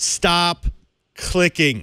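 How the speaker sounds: stately, grand, high delivery. Host speaking to the audience before moving on, in their most stately voice. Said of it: "let me do this in my most stately voice".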